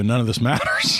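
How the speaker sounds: plain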